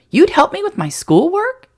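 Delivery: excited, eager, very high pitch. Reading a boy asking if he'll get homework help: excited question. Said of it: "Benji asked excitedly".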